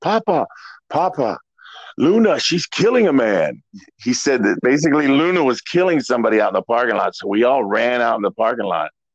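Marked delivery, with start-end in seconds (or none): 0.0-3.6 put-on French-Canadian accent. Retelling someone running into the room calling for Papa: Tiger Jackson's French-Canadian accent. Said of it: "with a really thick French-Canadian accent".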